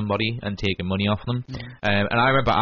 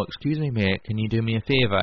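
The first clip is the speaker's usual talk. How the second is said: put-on sinister, menacing tone. Retelling a stranger approaching at the metro ticket machine: mimicking a sinister tone. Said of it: "In a kind of, like, sinister tone".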